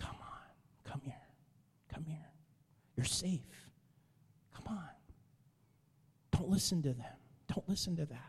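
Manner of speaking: tender, soothing, soft, coaxing near-whisper. Speaker voices the Lord drawing us a little closer: gentle voice. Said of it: "Gentle voice".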